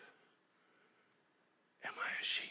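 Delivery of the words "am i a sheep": soft, breathless whisper. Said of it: "Mister Rogers whispers to his wife".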